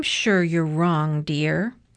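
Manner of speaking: ordinary delivery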